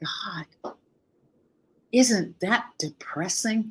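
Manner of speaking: half-whispered stage whisper. Retelling someone's reaction to hearing about grief coaching: imitating a near-half-whisper. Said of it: "almost in a whisper".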